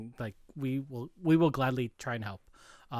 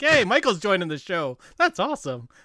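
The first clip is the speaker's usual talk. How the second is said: oblivious, clueless chatter, pitched up and raised; 6 semitones higher, 6 dB louder than usual. Retelling a castmate's reaction to the news: imitating an oblivious Colm Meaney. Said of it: "who was sort of oblivious of it all".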